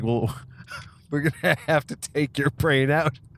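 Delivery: dim, dumb, dopey, stupid-sounding voice. Retelling a comedy sketch, the doctor answering a patient: imitating John Cleese sounding stupid. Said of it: "he just sounds as stupid as the guy".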